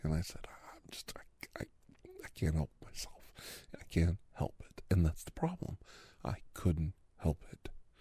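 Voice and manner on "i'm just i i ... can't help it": play-acted breathy, tearful, whispered, crying stammer. Retelling own words while starting to cry from frustration: retelling own crying. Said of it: "that I started to cry".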